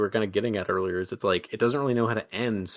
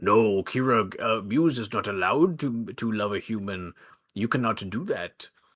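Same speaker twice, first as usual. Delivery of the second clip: god-like voice, as if from the sky. Retelling a story, the speaker voices Zeus speaking to Kira in a booming Zeus voice. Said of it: "Zeus's voice starts booming".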